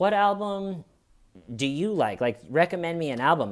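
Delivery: put-on sarcastic pathetic tone. Retelling asking a music expert to recommend an album, in a retold self-deprecating tone. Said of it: "in the tone of voice of like, all right, since I'm such a pathetic loser".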